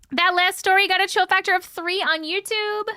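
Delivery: loud, high yelling. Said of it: "I feel like I'm yelling".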